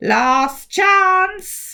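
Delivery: loud, high, threatening, ominous, menacing voice. Reading a story, a talking mouth warns of the last chance: menacing. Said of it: "it said menacingly".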